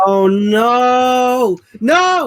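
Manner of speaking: high, loud, dismayed outcry.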